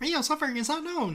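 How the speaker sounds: high squeaky cartoonish voice. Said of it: "You can do Mickey Mouse".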